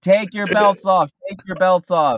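very high, loud, barked shouting. Retelling what TSA agents kept saying at security, retelling agents' yelling. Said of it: "the TSA agents kept yelling like".

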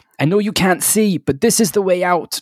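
high, ringing shout, calling out loudly. A player voicing her character calling to Nyx, who can't see: shouting. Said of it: "she's just going to shout".

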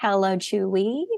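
very soft, honeyed, sugary sweet voice. Retelling a phone call to customer service: imitating her sweetest voice. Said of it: "Je prends ma plus douce voix".

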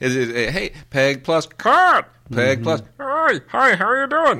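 high pitched, sing-song and drawn out. Telling a friend about a kids' show, doing the Cat voice from Peg plus Cat. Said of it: "that's a guy doing that voice".

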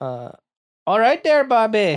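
put-on Minnesota accent, sing-song. Asked to do his best minnesota accent on the spot: minnesota accent. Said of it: "do your best Minnesota accent".

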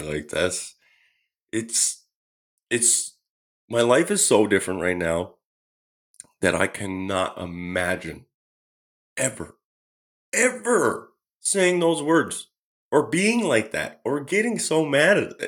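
emotional voice, slow and high. Reflecting on no longer saying those angry words: emotional, having a moment. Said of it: "I'm just having a moment here".

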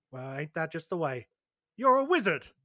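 put-on startled, shocked outburst in a young man's voice. Voicing a blonde-haired young man who is shocked: shocked young man. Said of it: "looks at you with kind of a shocked expression, says".

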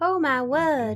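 put-on southern belle voice. Joking that opossums are like Scarlett O'Hara: Scarlett O'Hara voice. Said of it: "they're like Scarlett O'Hara".

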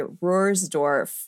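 American accent and pronunciation. Showing how to say the castle's name the American way: American pronunciation. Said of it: "if you do really American".

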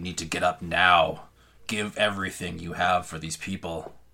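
loud, sinister, changed voice. Voicing the mother pulling Roxy out of bed as her voice turns, changed voice. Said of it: "her voice kind of turns. This is not your mother's voice anymore".

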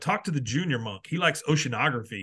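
ordinary talk

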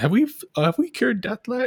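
put-on very high, piping kid's voice.

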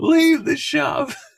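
shrill shouting, pitched very high. Retelling someone in the crowd during a bit, retelling a shout. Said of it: "he's just shouting".

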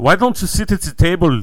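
put-on loud German accent. Joking about a panda telling women to sit at the table, in a German accent. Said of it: "What was that accent?".

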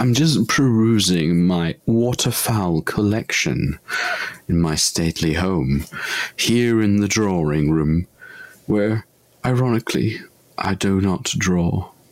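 plummy, put-on upper-class English accent. Asked to try the phrase in a posh accent, the speaker performs it in a posh accent. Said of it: "Can [name] try that in a posh accent?".

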